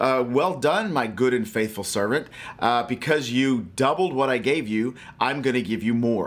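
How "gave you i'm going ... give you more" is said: ordinary talk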